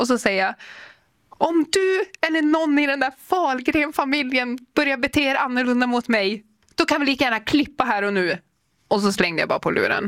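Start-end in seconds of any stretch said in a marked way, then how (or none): 1.3-8.4 put-on, high, furious outburst through crying. Retelling a phone call with dad, speaker re-enacts past self, furious and crying. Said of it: "blir fly förbannad och börjar gråta".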